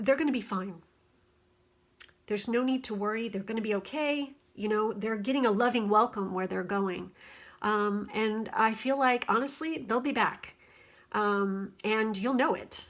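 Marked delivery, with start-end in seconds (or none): 0.0-7.1 choked-up voice catching and breaking, rushed. Reassuring a listener about someone passing into the next life, choked up. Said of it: "I'm getting choked up".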